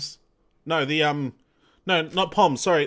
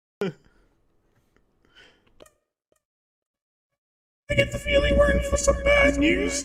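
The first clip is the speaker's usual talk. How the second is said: ghostly put-on voice, very high. Reading a game character's line aloud: ghost voice. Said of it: "that was the ghost voice".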